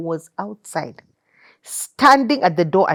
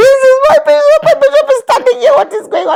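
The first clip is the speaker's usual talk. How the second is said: put-on very high, loud hyperventilating excitement; 8 dB louder than usual.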